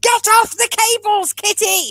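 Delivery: play-acted shriek, very high and stretched out. Retelling telling a kitten to get off the cables: imitating own screaming. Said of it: "constantly screaming at I T, going".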